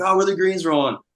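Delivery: put-on, very high-pitched hollering yell. Retelling fans at a golf tournament asking about greens: imitating fans hollering. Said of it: "everyone just hollering at you".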